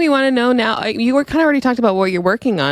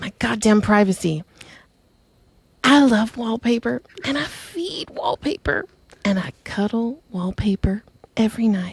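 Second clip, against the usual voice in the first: put-on church lady grandma voice; 4 dB quieter than usual. Imitating a grandmother introducing her dog: imitating grandma, a church lady. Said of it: "She's a very church lady".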